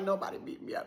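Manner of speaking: soft, hushed, whispered voice.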